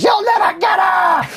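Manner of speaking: shrill, very high-pitched shrieking scream. Retelling locking someone in and screaming at the windows: imitating screaming. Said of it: "screaming at the windows".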